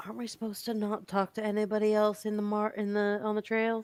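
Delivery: mumbling under breath. Voicing a character as wary lizard folk approach: mumbling under her breath. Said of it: "Stevie kind of mumbles under her breath".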